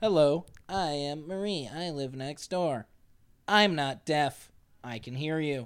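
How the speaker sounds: slow synthesized text-to-speech computer voice. Retelling a neighbor playing typed words from her phone: Stephen Hawking-esque voice. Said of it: "Stephen Hawking-esque goes".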